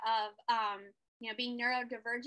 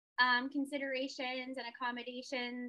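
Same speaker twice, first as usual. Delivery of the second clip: ordinary talk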